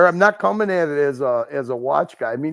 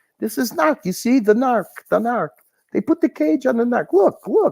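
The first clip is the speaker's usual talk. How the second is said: high, failed attempt at a Pakistani accent; 8 semitones higher than usual. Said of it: "I can't do a Pakistani accent".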